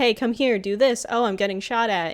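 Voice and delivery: acted-out, shrieked, screamy outbursts. Explaining why Claptrap is annoying in Borderlands one, imitating Claptrap screaming. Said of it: "and he's like screaming a lot".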